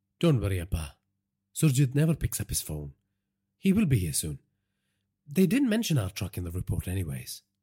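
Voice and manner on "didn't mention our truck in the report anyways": ordinary delivery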